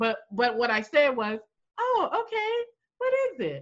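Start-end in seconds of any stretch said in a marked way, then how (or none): 1.8-3.6 high, tight, fake-polite, snippy tone. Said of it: "If you said it with that tone".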